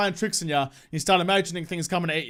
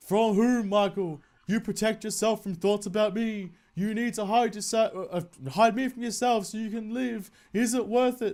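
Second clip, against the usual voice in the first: put-on ghostly spirit voice; 2 semitones higher than usual. Speaking as the ghost to Michael, in a ghost voice. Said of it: "Do you like my ghost voice".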